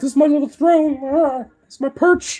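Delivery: piping, very high, loud pet voice. Voicing what the pet seems to think on its perch: voicing the pet's thoughts. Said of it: "He's just like".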